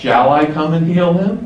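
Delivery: rising intonation at the end on him.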